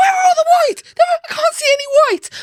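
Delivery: very high, shrill, rattled-off rapid yell. Recalling hearing mum shout at the England players, imitating mum shouting. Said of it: "I could hear my mum shouting".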